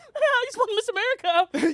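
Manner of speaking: strained, forced cheer. Greeting the podcast on being welcomed: forced happy, like at gunpoint. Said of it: "You sound like there's someone with a gun behind there".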